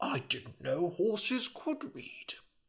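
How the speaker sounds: muttering. Reading a story aloud, the narrator gives Elric's line, muttered. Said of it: "muttered Elric".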